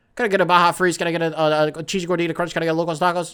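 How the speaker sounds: rapid-fire talking like an auctioneer. Speaker acting out ordering restaurant food while high, fast auctioneer-style talk. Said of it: "I talk like I'm at a fucking auction".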